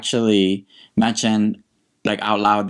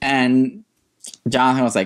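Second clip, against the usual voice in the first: ordinary delivery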